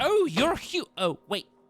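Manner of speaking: very high, slow, drawn-out little gnome voice. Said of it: "and he's like".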